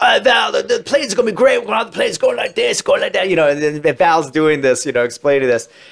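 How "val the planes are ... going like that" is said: put-on British accent, pitched higher. Retelling an actor quoting a film director, doing a Tony Scott British impression. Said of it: "doing like a Tony Scott British impression".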